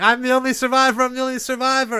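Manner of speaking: put-on screaming, pitched very high. Retelling what a guy shouted after the castle burned: imitating a guy screaming. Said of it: "There was a guy screaming".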